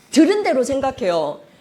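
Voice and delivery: normal talking voice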